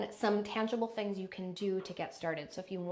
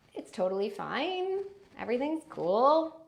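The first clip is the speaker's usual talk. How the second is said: statements ending with rising, question-like intonation; 3 semitones higher, 6 dB louder than usual. Demonstrating types of speaking voices, questioner voice with rising intonation. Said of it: "Then there's the questioner".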